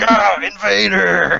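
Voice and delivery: slow, distant mock scream. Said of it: "She's like".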